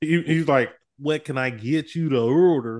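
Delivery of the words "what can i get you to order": heavy put-on country Oklahoma accent. Retelling how a man taking their order sounded, imitating super country accent. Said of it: "he sounded like super country".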